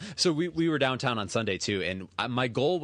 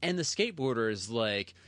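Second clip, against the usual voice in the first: usual speaking voice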